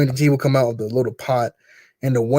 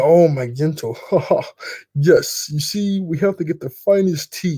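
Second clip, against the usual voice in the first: slow, lingering delivery, each word drawn out; 4 semitones higher than usual. Imitating La Brava fussing over Gento: imitating La Brava. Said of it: "she's like".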